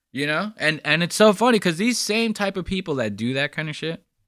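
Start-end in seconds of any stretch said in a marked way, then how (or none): none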